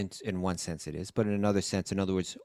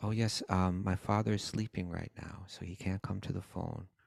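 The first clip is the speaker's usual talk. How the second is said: put-on polite gentleman voice, quieter, like a young boy; 4 dB quieter than usual. Retelling a phone call answered by an eight-year-old: imitating Tarun's polite gentleman voice. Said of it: "he was like a real gentleman on the phone".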